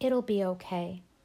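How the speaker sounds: ordinary delivery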